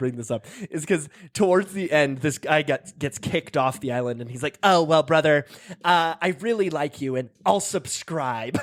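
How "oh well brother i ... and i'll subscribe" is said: put-on cringy nerdy voice. Retelling what a nerdy contestant said after elimination: imitating a nerdy contestant. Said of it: "he's just all like this".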